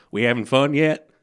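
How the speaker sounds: very loud, booming preacher-style southern drawl. Retelling a guest pastor's question to the congregation: southern drawl. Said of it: "in his southern drawl went".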